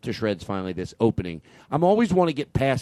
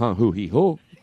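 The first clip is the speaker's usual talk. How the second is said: ordinary talk, nothing marked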